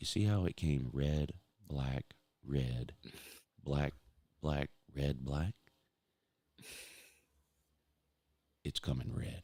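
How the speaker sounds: mock low-volume confiding tone. Retelling how Pa advises you at the roulette table: imitating Pa talking quietly. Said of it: "talking at a level where only you can hear it".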